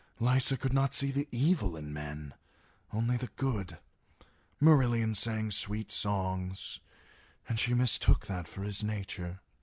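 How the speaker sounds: tender, gentle delivery. Narrator reading Peter speaking of his wife Lysa, tender. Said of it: "Peter spoke so tenderly".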